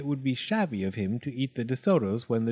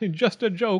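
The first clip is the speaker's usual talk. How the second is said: high, gleeful chortle, tickled; 6 semitones higher than usual. A fox laughs to the dentist after snapping his mouth shut, chortling. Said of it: "he chortled".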